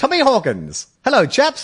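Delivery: put-on slow, high, swooping old-film-star voice. Joking about a footballer's manner: Tom Hawkins as a 1920s movie star. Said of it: "like a movie star from the nineteen twenties".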